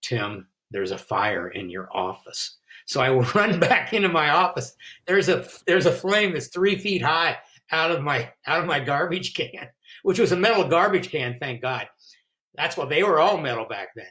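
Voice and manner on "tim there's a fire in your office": mock, very straight deadpan in low, flat monotone. Retelling what a woman running out said to him in the hall, flat monotone. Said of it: "very, very straight with monotone voice".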